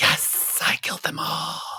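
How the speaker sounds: hissing cartoon snake voice, whispered. Describing a killer who whispers, doing his line like a cartoon snake. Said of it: "he sounds like a cartoon snake".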